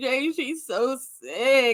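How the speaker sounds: play-acted, very slow, drawn-out tearful weeping. Retelling a past talk with jay: retelling crying words. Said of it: "I went start crying".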